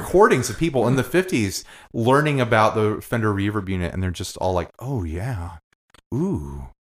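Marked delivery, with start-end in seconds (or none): 4.8-6.6 put-on creepy delighted voice, lower and quieter. Imitating fifties recordings of people hearing reverb: creepy imitation of pleased listeners. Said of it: "So creepy".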